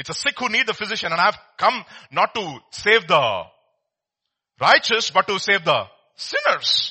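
loud, play-acted, heavy sarcasm dripping with irony. Retelling a quoted saying, imitating a sarcastic tone.

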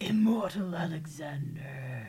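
low, growled delivery. Repeating a self-introduction at the start of an episode, growled. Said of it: "There needed to be more growl to that".

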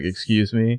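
put-on bitchy voice. Retelling a scene where Shauna answers Hannah: super bitchy Shauna. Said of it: "super bitchy as well".

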